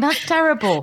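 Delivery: talking through helpless laughter. Reacting to news of a parents' marriage ending, laughing while talking. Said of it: "I don't know why I'm laughing".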